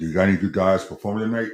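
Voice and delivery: dropping into a deep, dark voice. Sitting at the Laugh Factory, the speaker retells a guy's question in Adrian Peterson's dark voice. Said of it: "in a dark voice saying".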